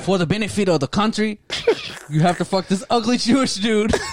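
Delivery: fake accent drifting into Mexican. Joking about the Chinese government, imitating officials instructing a girl: accent that came out Mexican. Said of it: "I like how you started off Mexican there".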